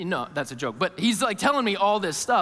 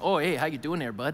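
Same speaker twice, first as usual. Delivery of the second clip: put-on thick, heavy Canadian accent. Retelling how a companion on a trail greeted him: thick Canadian accent. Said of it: "in his thick Canadian accent".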